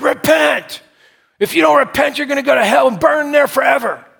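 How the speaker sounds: high, loud screaming yell.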